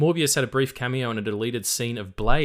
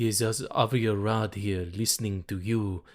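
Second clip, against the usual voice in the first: sexy, seductive put-on producer voice. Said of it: "that's a bit sexy for Avi".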